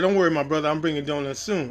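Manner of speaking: usual speaking voice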